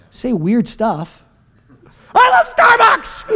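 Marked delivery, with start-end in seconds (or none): 2.1-3.3 very high, fake shouted whoop. Speaker showing listeners what weird shouting in worship sounds like, mock shouting. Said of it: "We're shouting about God".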